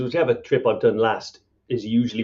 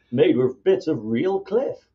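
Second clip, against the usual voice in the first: fake, put-on American accent, pitched up; 5 semitones higher than usual. Pitching a mug as a mock brand partner to get free stuff: put-on American accent. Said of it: "Is that your American accent?".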